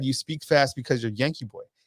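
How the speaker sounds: ordinary delivery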